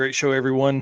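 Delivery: ordinary delivery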